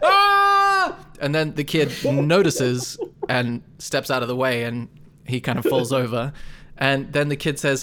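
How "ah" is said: high, loud battle-cry yell. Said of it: "yelling as he runs out".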